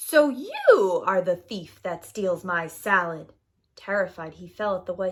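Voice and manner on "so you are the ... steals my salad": loud, grating, harsh witch voice. Narrator reading the witch catching the gardener at night, in a harsh witch voice. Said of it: "suddenly a harsh voice said".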